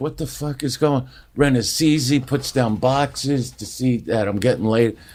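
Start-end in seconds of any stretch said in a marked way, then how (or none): 0.0-1.1 put-on bewildered comic voice. Retelling a comic walking into the kitchen mid-fight: imitating bewildered Sebastian. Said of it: "bewildered, comes walking into the kitchen like".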